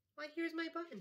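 very high, crying-out exclamation. Spotting something small and round on the mattress, he cries out. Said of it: "he cried".

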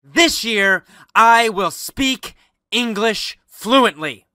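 strong, powerful voice with tremendous energy and emotion. Showing listeners how to say their English resolution: strong, with tremendous emotion and energy. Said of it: "with tremendous emotion and energy".

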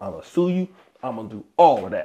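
ordinary talk

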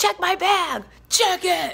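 put-on very high, stretched-out, demanding scream. Retelling a chaotic line, she repeats what she screamed at the bag checkers: retelling a scream. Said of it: "We're screaming".

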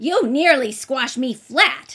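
very loud, grumpy, cross tone. A little man complains to the girl who nearly squashed him: cross. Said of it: "the little man said crossly".

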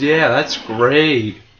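very sarcastic. A gamer reacts as a door closes on him mid-game, with heavy sarcasm. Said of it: "He said with heavy sarcasm".

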